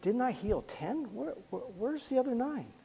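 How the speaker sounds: very soft, hushed, wounded, grief-filled voice. Voicing the Lord's question, imitating a grieving, hurt voice. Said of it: "a tone of voice that had grief in it".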